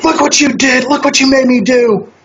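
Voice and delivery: put-on furious freakout with voice pitched very high. Retelling a scene, the speaker acts out a woman losing it: mock furious outburst. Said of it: "as soon as she freaks out".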